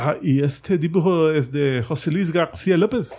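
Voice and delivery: thick, heavy, laid-on, put-on French accent. Retelling a question someone put to the editor, heavy French accent. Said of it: "así en acento francés, vea bien, eh, heavy".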